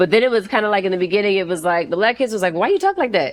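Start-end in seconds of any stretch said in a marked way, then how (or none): 2.5-3.3 high, blunt, straight-out schoolkid voice. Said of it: "my voice going high".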